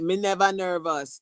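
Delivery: put-on Jamaican accent. Retelling a groom's answer outside a church: imitating a Jamaican accent. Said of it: "a Jamaican dude".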